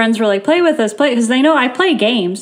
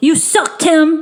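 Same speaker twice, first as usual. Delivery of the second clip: put-on high, little kid voice; 5 semitones higher than usual. Retelling what was heard over game voice chat: imitating a little kid. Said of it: "you just hear this little tiny kid go".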